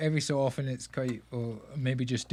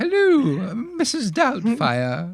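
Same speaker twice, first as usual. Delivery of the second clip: posh English lady voice, higher and louder; 9 semitones higher, 9 dB louder than usual. Asked to do Robin Williams, imitating Mrs. Doubtfire: Mrs. Doubtfire voice. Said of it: "I'm sounding like a posh English lady".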